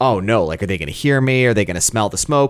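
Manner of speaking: fast, panicky, worried fretting in a quick string. Retelling a movie scene where a character on the roof panics: imitating a panicking character. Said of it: "And so he kinda panics".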